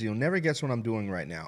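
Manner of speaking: ordinary delivery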